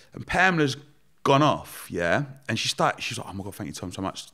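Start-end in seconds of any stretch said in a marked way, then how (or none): 3.3-4.3 play-acted, very quiet, hushed, weepy, tearful grateful voice. Retelling someone's thanks while she cried: imitating someone crying. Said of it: "But started crying".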